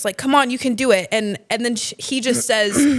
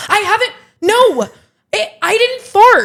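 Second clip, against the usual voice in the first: mock very high, loud, stumbling, defensive voice; 10 semitones higher, 7 dB louder than usual. Retelling a friend's reply in a Pilates class: imitating Jenna being defensive. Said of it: "Jenna just got so defensive".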